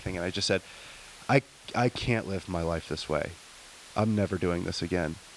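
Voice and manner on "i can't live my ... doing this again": sincere, earnest, unsarcastic tone, much lower. Recalling answering the paramedic's question after he peeked in: retelling a sincere, unsarcastic reply. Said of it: "I was past sarcasm".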